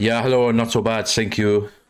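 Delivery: fake German accent throughout. A co-host answers the opening greeting in a put-on German accent. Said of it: "That's my German accent".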